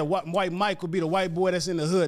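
ordinary talk, nothing marked

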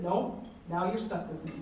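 ordinary delivery

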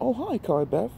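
high, startled cry of surprise. Mom steps into the living room, finding Carly Beth home early, crying out in surprise. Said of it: "she cried in surprise".

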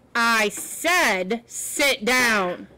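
very slow, emphatic, every word stressed. Explaining to a listener what emphatically means, demonstrating an emphatic, louder voice. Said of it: "my voice gets louder".

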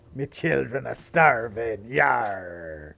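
put-on pirate voice with drawn-out yarr. Playing a game, busking on the streets for money in a pirate voice. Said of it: "I started speaking like a pirate".

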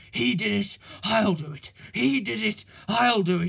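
panting while speaking. Narrator reads a racing engine's words to himself, panting. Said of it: "he panted".

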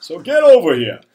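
booming, very loud Maine fisherman accent. Imitating an animal copying human speech; Maine fisherman's accent. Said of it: "with a nice Maine fisherman's accent".

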